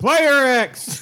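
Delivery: loud, high-pitched bellowed shouting. Game judge introducing the players on a podcast: shouting into the mic. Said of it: "Don't shout into your mic".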